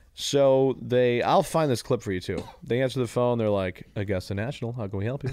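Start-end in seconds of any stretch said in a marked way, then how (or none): none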